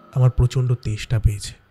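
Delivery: deep, weighty male voice. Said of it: "বেশ পুরুষ কণ্ঠস্বরে, একটা ভারী কণ্ঠস্বরে".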